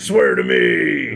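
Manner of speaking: loud, rough-edged, forceful delivery. Recalling how he got into a character for recording, the speaker does a Batman impression. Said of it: "doing my best Batman impersonation".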